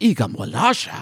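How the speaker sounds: character-style gibberish speech with a lifted, rising ending.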